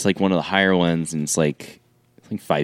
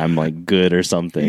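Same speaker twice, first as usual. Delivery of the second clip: plain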